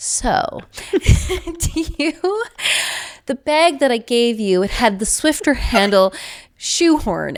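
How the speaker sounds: high, slow, laughing through every word. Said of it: "tears streaming down my face, like, couldn't stop laughing".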